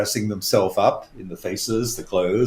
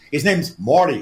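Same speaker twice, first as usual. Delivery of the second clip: put-on New York accent, pitched up; 5 semitones higher, 4 dB louder than usual. Retelling a dream about a guide figure: New York accent as Morty. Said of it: "he said with a New York accent".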